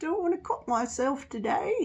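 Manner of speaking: amateur, attempted British accent. Speaker talking about putting off a job tries a British accent. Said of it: "there's me trying to do a British accent".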